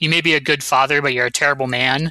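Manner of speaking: ordinary delivery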